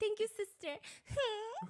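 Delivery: very high, eerily spot-on put-on woman's voice. Retelling what a woman says, imitating a woman's voice. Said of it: "And she'll go like".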